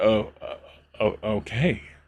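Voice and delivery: halting, stuttering speech. Narrating how a character in the story answers: Neutral stammering a little. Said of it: "stammers a little bit and goes".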